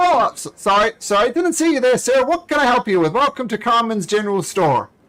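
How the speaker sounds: very high, flustered, stumbling voice. Voicing a dwarf shopkeeper suddenly noticing a customer: flustered dwarf shopkeeper. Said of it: "one of the dwarfs says".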